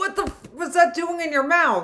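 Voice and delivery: shouting. Reacting to a choking story with a big potato piece: shouting. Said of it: "I'm sorry, I just yelled".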